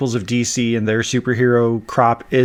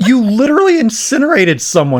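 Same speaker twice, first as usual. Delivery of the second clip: high voice cracking with disbelief and exasperation; 11 semitones higher, 4 dB louder than usual. Reacting to a character's hypocrisy in a show episode, voice cracking. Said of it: "My voice is cracking because I can't like contain this".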